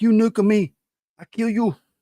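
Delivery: put-on loud, very high, belted voice with Japanese accent. A host describes the new Godzilla movie, doing Godzilla voice, Japanese accent. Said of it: "that's his Japanese accent, Godzilla".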